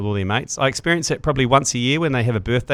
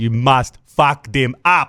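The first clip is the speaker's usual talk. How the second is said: put-on South African accented speech; 4 dB louder than usual. Quoting Rassie Erasmus, trying to put on his South African accent. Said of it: "the more South African I try and put into it".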